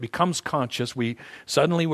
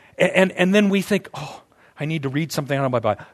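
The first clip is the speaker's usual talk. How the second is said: ordinary talk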